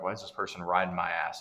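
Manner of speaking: normal talking voice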